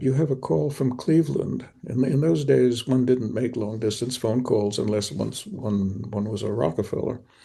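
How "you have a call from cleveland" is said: wonderstruck, awed tone. Retelling what the father said about a phone call: imitating an awed father. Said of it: "my father came in awed and said".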